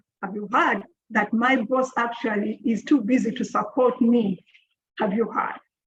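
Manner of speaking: plain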